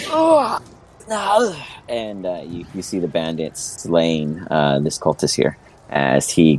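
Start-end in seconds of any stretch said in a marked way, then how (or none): 0.1-1.6 shrill, very high dying cry. Voicing a cultist struck down in battle: dying cry. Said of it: "a cry of death".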